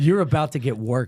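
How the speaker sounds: normal talking voice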